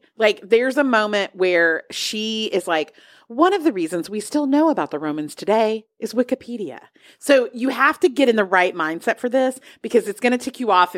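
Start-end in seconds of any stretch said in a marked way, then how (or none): 3.3-6.8 dead serious delivery, no hint of joking. Quoting a line from a deadpan mockumentary: deadpan Philomena Cunk impression. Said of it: "this is deadpan absurdity".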